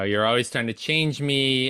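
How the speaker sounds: ordinary talk, nothing marked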